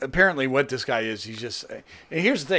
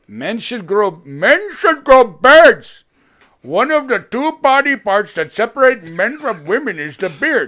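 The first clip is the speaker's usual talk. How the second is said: very loud, high-pitched put-on Indian accent; 8 semitones higher, 8 dB louder than usual. Quoting another person's words to the other speaker, in a put-on Indian accent. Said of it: "that was a uh, Indian accent".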